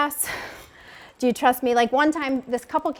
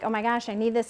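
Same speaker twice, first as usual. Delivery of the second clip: put-on begging, pleading voice; 2 semitones lower, 3 dB quieter than usual. Retelling a phone call to her husband about groceries: imitating her own begging. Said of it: "And so I'm begging him".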